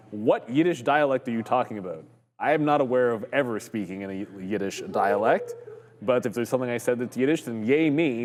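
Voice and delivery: ordinary delivery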